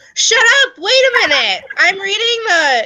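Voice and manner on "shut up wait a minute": shrill, loud, very high-pitched shout. Reading penalty news during a talk and suddenly reacting: yelling. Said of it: "I did not mean to yell".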